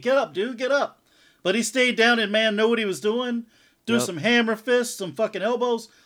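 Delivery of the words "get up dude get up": urgent, urging yelling. Recalling watching a fight on tv, retelling yelling at the tv. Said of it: "I'm like yelling at TV".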